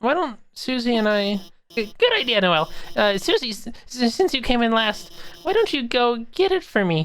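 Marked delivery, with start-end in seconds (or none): 1.8-7.0 put-on nervous teacher voice, higher. Teacher asks a student to fetch a box from the supply closet, nervous stammering Alphys. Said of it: "I'll write the assignment. / Uh, oh, n- no, you're fine. We, we're just".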